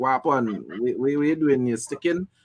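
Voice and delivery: ordinary talk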